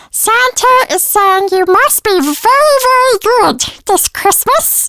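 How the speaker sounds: squeaky, very high chipmunk elf voice. Recalling his own voice job as a christmas elf, chipmunk elf voice. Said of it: "this Christmas elf with my chipmunk voice".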